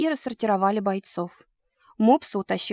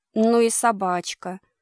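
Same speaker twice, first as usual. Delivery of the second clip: sarcastic drawl, much slower; 3 dB louder than usual. A businessman speaking up at dinner, in a sarcastic drawl. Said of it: "язвительно протянул деловой человек".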